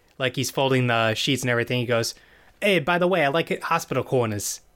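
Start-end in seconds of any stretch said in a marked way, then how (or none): 2.6-4.6 snide, sarcastic wisecracking tone in put-on New Jersey accent. A character folding sheets tries to annoy Turner, retelling a sarcastic line. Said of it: "like be sarcastic".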